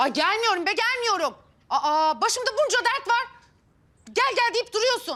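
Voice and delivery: agitated, irritated, heated and angry. Refusing on the phone to come despite repeated pleas: yelling. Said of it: "neden bağırıyorsun şimdi?".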